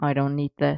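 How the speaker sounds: icy, detached. Arthur, fed up after Merlin shouts at him, turns to leave, cold. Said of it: "he said coldly".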